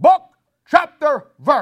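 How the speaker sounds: very high, very loud, swooping, booming voice. Speaker retells a man sitting down front answering him: retelling a big booming voice. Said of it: "big, loud, booming voice".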